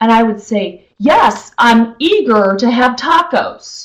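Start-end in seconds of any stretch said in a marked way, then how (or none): 1.0-3.9 slow, expressive facilitator voice with big inflection. Retelling answering a husband's dinner question: imitating own loud expressive facilitator voice. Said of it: "I'm very expressive, and I actually use inflection, and I'm loud".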